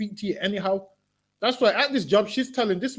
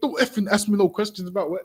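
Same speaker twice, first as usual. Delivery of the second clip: ordinary delivery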